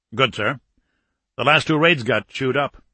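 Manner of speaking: plain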